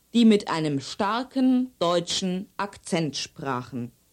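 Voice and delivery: normal talking voice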